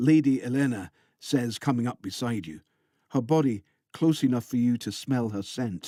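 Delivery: ordinary delivery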